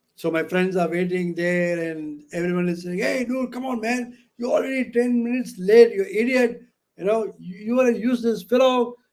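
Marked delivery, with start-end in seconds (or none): 3.0-8.9 mock furious, high-pitched angry shouting. Retelling what friends yelled when the speaker arrived late, retelling friends' shouting. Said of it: "they start shouting at me".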